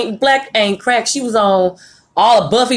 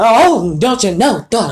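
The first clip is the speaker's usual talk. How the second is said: slow, drawn-out, theatrical acting voice. Joking about how an actress sounds in every movie: Keke Palmer impression. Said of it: "when she acts, it be like".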